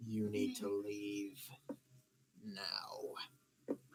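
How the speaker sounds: very slow, deep, rumbling growl. Voicing a Durgar who slams the table and orders the party out: growling in a very deep voice. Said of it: "growling over in a very deep voice".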